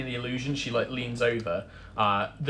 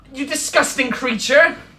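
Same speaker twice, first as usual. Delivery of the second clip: loud, very high outraged yelling; 13 semitones higher, 8 dB louder than usual. Describing a performer who suddenly turns on you, acting her out mock-accusing. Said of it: "Like just starts accusing you".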